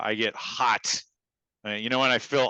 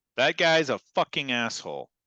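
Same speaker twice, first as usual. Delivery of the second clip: put-on, fed-up angry outburst; 4 semitones higher than usual. Giving an example of being reactive about a guy, acting angry. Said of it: "Say I'm angry. I'm reactive".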